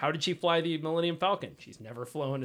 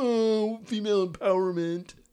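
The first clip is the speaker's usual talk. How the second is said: high, loud, whiny, complaining tone; 7 semitones higher, 6 dB louder than usual. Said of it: "The people who are review bombing Captain Marvel".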